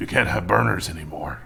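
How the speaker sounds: gruff, raspy put-on voice. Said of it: "it was just a raspy voice".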